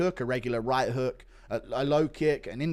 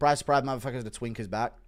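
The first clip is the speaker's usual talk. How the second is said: usual speaking voice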